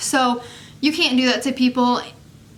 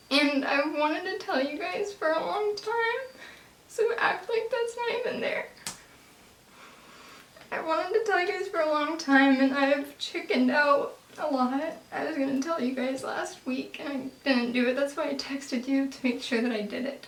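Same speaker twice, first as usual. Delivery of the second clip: near tears, quieter, higher; 3 semitones higher, 9 dB quieter than usual. Telling the group something she has long put off saying: close to tears. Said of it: "I'm gonna cry a little bit".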